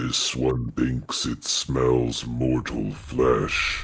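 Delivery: deep, very low, rasping creature voice. Heard through a door, one of two voices inside speaks: low raspy voice. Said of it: "two low, raspy voices inside".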